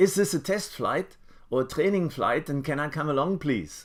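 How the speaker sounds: put-on German accent. Recalling asking to come along on a flight, in a very thick german accent. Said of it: "in this very thick German accent".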